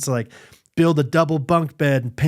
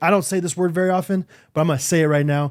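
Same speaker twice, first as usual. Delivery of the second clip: plain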